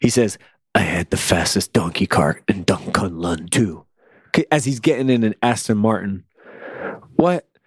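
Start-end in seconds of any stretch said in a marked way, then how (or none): 0.7-3.9 hushed, whispered delivery. Quoting a character's odd line from episode six: imitating Finn Jones whispering. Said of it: "wackiest lines that he whispers".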